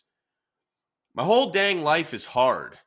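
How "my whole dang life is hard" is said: high, loud exasperated outburst. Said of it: "the visceral reaction is".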